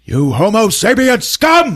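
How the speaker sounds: shrill, high, loud shouted yell. Telling a story, acting out a man yelling at a construction worker: retelling a yell. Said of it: "he just yells out".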